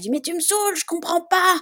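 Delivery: very high-pitched, angry yelling. A parent recalls what they shouted at their crying son, retelling yelling at him. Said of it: "Et je lui gueulais dessus".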